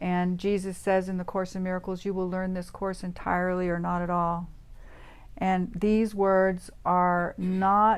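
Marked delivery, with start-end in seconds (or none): none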